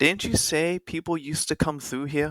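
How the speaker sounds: calling out across a distance, pitched high. Your character calls to a companion across the watering hole: calling out across a distance. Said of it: "he'll kind of call out to her".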